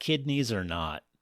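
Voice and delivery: ordinary delivery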